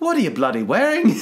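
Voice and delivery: bad Irish accent. Retelling an Irish man's reaction to someone mid-twirl, in a bad Irish accent. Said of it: "I can't even do the accent".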